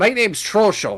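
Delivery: small, high fish-creature voice. Voicing a little fish person greeting a newcomer: Trosho, little fish person voice. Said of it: "little fish person, uh, like, halfling-sized fish person".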